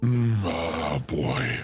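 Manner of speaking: put-on "oh boy" said low, slow and ominous.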